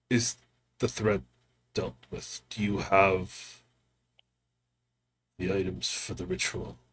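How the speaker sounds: put-on low, raspy, half-whispered old man voice. A storyteller voices a character in a game scene, in a low raspy voice. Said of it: "In this low, raspy kind of voice".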